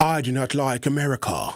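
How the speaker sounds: put-on, playful Chinese accent. Speaker imagining someone from china who dislikes america, in a chinese accent. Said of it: "let me do a Chinese accent".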